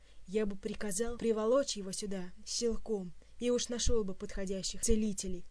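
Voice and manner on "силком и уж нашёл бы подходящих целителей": plain reading voice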